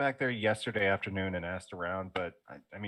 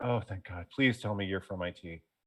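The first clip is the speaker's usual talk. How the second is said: exasperated, relieved sighing delivery. Retelling what a man said on coming into the office, imitating an exasperated, relieved sigh. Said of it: "gives this exasperated, like relieved sigh".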